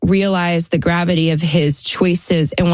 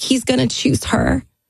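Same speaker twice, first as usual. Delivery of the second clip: mock crying, sobbing through the words; 9 semitones higher than usual. Recounting a phone call, acting out their past self sobbing. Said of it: "and I'm just sobbing".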